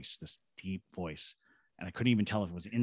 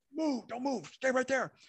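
mock shouting, shrill and pitched very high. Retelling how a cop pulled a gun: imitating a cop shouting. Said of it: "One of the cops pulls a gun and just shouts".

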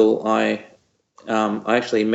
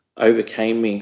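usual speaking voice

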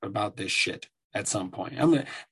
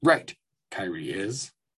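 put-on wise alien master voice, pitched lower; 2 semitones lower than usual. Introducing the topic of Kyrie, doing a Yoda impersonation. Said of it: "the old Yoda impersonation".

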